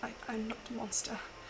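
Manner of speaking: soft, fast, broken mutter, almost to oneself.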